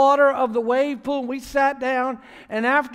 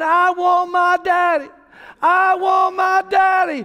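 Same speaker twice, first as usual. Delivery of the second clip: put-on child's scream, much higher and slower; 8 semitones higher, 4 dB louder than usual. Retelling a frightened girl calling for her daddy as the waves grow, imitating Morgan screaming. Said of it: "She started screaming".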